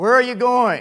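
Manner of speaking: big, resounding, very loud, high booming voice. Recalling the ex-Marine calling out to them as a child leaving; booming voice. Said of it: "I hear this booming voice".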